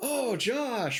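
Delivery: shrill, very high, very loud top-of-lungs yell. Retelling how friend Cody yelled in the Library of Congress: retelling a loud yell. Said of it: "real loud".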